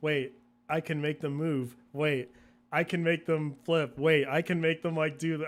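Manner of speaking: usual speaking voice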